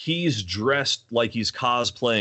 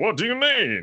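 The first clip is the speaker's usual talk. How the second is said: strange, off-kilter put-on Southern drawl; 7 semitones higher than usual. Mocking an actor's line delivery in a weird southern accent. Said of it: "his weird Southern".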